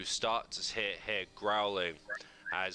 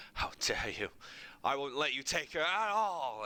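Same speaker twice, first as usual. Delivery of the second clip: trembling with anger, defiant, rising shout; 6 semitones higher than usual. Voicing Ismark pointing a shaking sword at Strahd: Ismark voice, shaking with anger. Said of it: "his hand's shaking as he points it to Strahd and goes".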